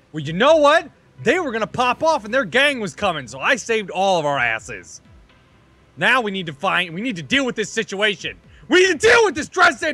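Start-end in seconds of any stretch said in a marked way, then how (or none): 5.9-9.9 yelling, much higher. After the gang threat, a character insists they deal with the situation, yelling.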